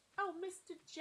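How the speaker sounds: put-on New York accent. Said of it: "I love doing this accent".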